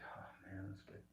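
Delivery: play-acted very hushed voice, laughter held back. Retelling reading a funny book in a library: imitating stifled laughter. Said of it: "I'm trying not to laugh".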